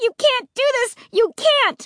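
very high, shrill, furious, angry screech. Narrator grabbing at a woman's mask with both hands, shrieking angrily. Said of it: "I shrieked".

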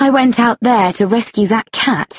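plain

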